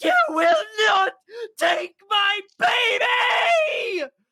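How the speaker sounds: howling shriek, very high, loud, shrill and drawn out. Voicing a struck creature as it reels back: howling scream. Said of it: "screams again, howling".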